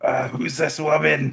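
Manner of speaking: whispering in a character voice. Voicing a character asking a companion about a stranger: whispering in character. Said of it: "I am gonna whisper over to Isaac".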